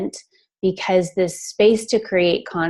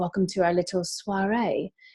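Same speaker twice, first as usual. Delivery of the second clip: quieter, put-on British accent; 7 dB quieter than usual. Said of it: "that's what she says".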